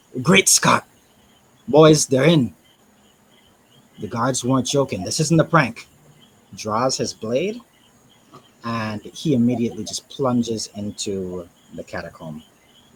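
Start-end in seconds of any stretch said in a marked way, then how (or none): 0.3-2.6 full, loud yelling shout. Voicing a character who draws his blade at the catacomb: yelling.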